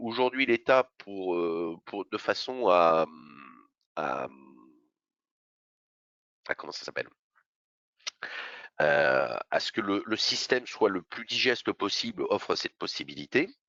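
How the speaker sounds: slightly halting, stumbling, fumbling for words. Speaker explaining a state system to listeners, stumbling over words. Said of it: "je bafouille un tout petit peu".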